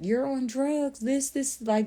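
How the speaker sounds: high, shocked screaming. Retelling a dad screaming at his son on the phone, retelling a father's screaming. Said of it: "the dad is like screaming and yelling".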